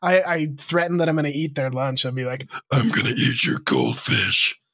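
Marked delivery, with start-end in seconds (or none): 2.7-4.6 deep, very low, menacing put-on scary voice. Retelling joking threats made to a kid, in a scary put-on voice. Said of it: "I love doing that voice with the kid".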